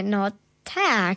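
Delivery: hesitant, uncertain voice. Retelling her answer to a ninja who asked her a question, retelling an unsure reply. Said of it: "Ja powiedziałam tak niepewnie".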